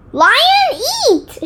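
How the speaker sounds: very high, loud yelling. Narrator reads Baby scrambling toward the bell marked Lion; shouted. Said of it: "Shouted Baby".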